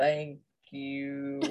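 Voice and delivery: low, soft, warped, creaky voice. Molly's floating body turns to look down at you: low warped Molly voice. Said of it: "Her voice is low and warped".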